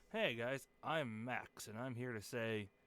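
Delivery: put-on cool-guy voice. Introducing himself to viewers in a video, put-on badass cool-guy voice. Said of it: "that guy's such a badass".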